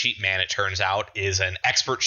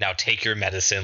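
put-on very sinister voice. Speaker quoting a character offering medicine, mock super-sinister. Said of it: "like super sinisterly".

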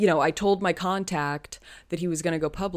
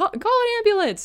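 put-on yell, much higher pitch; 4 dB louder than usual. Recapping a scene, acting out a character yelling to somebody: retelling a character's yell. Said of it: "Joan yells to somebody like".

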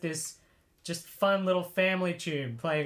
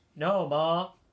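utterly bland, flat monotone with zero emphasis. Retelling the character's line before she opens the cupboard: imitating a bland delivery. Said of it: "Just in the most bland way possible".

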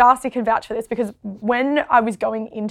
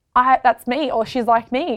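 usual speaking voice

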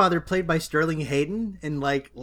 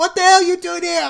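put-on terrible British accent, full shriek; 13 semitones higher, 8 dB louder than usual. Acting out a woman screaming at the hero in a film scene: mock-screaming, worst Hugh Grant accent. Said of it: "your British accent and also screaming".

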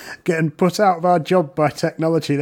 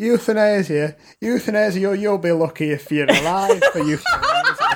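put-on sing-song northern English accent; 4 semitones higher than usual. Quoting what their mum used to say, in a northern accent. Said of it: "I always do a fucking northern accent".

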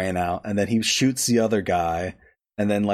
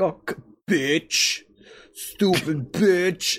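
very slow, fed-up cursing, pitched up, drawn out; 8 semitones higher than usual. Retelling the men's reaction as she storms out: imitating a frustrated gamer cursing. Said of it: "they sound like me when I'm playing Monster Hunter World".

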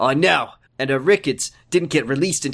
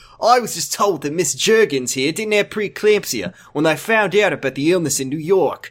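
put-on New York accent; 3 semitones higher than usual. Reading a doctor's line aloud in a story: new york accent. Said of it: "he said New York in a New York accent".

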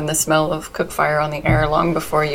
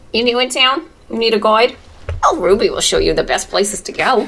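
put-on New York accent in a raised pitch; 6 semitones higher, 4 dB louder than usual. Retelling what a woman asks as you step off the boat, new york accent. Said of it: "Are we in New York City?".

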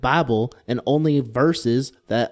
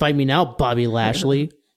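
ordinary talk

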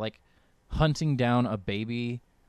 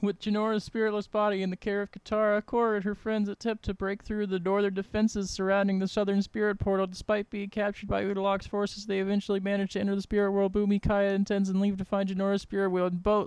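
rushed, much higher, breathless, all in one breath; 10 semitones higher than usual. Reading an episode overview aloud in one breath. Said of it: "Couldn't read that whole overview in one breath".

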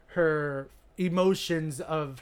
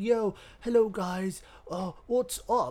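fake, laid-on British accent; 4 semitones higher than usual. Retelling a story as Malcolm walks in; put-on British accent. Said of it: "That's my British accent".

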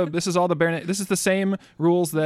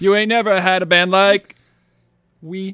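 put-on manic genie voice, higher and louder; 4 semitones higher, 4 dB louder than usual. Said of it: "the Robin Williams genie on there".

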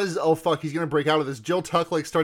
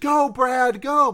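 high, loud, fake cheering; 8 semitones higher, 5 dB louder than usual. Retelling how a character cheers on one man: imitating manipulative cheering. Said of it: "nakedly manipulating both of the men".

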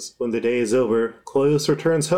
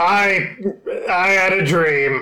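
put-on big creature voice, much higher; 7 semitones higher, 3 dB louder than usual. Voicing the big beholder in a roleplay, in a put-on beholder voice.

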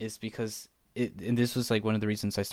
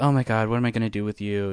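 mock snarky sitcom tone, louder; 7 dB louder than usual. Describing the stereotypical sitcom wife, imitating a snarky sitcom wife. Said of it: "she's always kinda snarky and like".

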